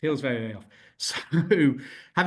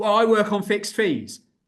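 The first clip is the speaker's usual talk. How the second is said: loud, pitched-up shout; 8 semitones higher, 5 dB louder than usual. Imagining a viewer objecting at the screen: imitating someone shouting. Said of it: "somebody shouting at the, at the screen".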